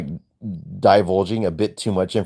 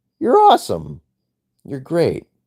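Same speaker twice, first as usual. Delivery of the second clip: voice cracking high, breaking mid-word; 7 semitones higher than usual. Signing off to listeners at the end of a show, voice cracking. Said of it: "Sorry about that weird voice crack".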